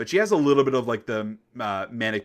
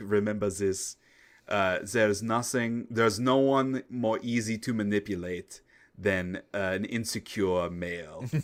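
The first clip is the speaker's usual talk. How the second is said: fake German accent, poorly done; 3 dB quieter than usual. Retelling a favorite line Voss says in the game, in a bad German accent. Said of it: "I'm going to do a bad German accent".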